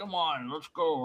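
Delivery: riled-up, high-pitched, angry, aggressive tone. Recounting a man who wanted to fight them, imitating an angry challenge. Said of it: "he got so angry, he wanted to beat me up".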